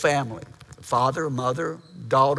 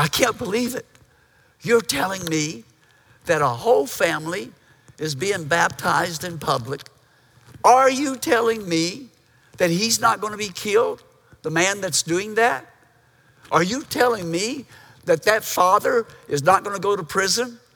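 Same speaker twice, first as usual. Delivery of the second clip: put-on loud stage whisper, higher pitch; 5 semitones higher, 4 dB louder than usual. Retelling a woman's amazed words during a baptism: imitating a loud stage whisper. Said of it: "in a loud stage whisper".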